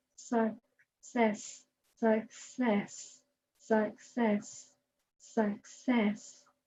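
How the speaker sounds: very slow, soft, drawn out word by word. Showing listeners what happens when a word is said again and again, very slow. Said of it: "let's say success really slowly".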